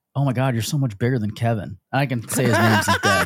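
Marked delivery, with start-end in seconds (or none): 0.2-1.8 imitated whisper in a girl's voice. Retelling how a girl got into bed and spoke: imitating a girl whispering. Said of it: "this girl whispers".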